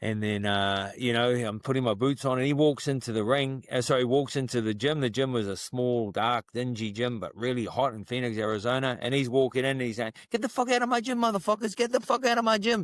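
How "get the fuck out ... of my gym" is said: very high, furious, angry yelling outburst. Retelling someone ordering people out of the gym: imitating an angry yell. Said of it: "angry and all this stuff".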